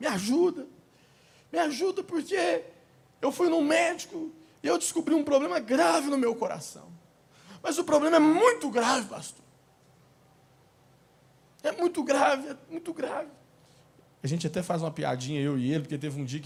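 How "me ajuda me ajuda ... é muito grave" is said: high, tearful, desperate crying plea. A pastor retelling a friend's plea to him, imitating someone crying desperately. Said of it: "Ele estava chorando, desesperado".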